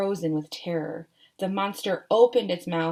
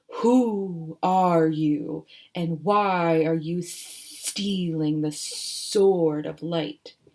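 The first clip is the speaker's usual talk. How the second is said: drawn-out, deliberate, very slow, deep sea-monster voice; 2 semitones lower than usual. Reading a story aloud, the sea serpent calls out to Jack and Annie, in deep booming serpent voice. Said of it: "the sea serpent's deep voice boomed through the cove".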